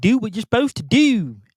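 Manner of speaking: clumsy, bad Baltimore accent, high-pitched and slow. Repeating the other speaker's line back: attempted Baltimore accent. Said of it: "I don't have the Baltimore accent down".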